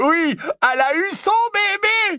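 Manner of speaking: very high, jubilant, joyful shout, rising. Announcing news to everyone at the table, shouting. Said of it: "hurla Lupin".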